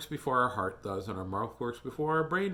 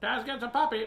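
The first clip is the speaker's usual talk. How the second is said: put-on parrot voice, higher; 11 semitones higher than usual. Imitating how a parrot sits around talking: imitating a parrot. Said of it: "You gotta do it like a parrot".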